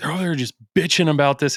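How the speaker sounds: put-on riled-up ranting. Retelling how dad talks when he gets fired up: imitating fired-up dad complaining. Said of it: "when he gets so fired up".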